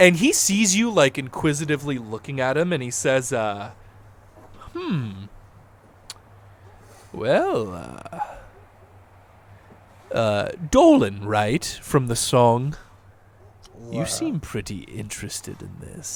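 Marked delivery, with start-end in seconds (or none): 4.7-16.2 speaking with a little theatrical flair. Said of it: "saying it with, like, a little bit of flair".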